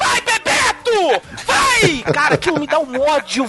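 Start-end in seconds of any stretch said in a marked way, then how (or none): 0.0-2.0 put-on mock scream, much higher, louder. Retelling how mom reacts from the kitchen during the World Cup: imitating mom screaming. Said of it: "Aí minha mãe".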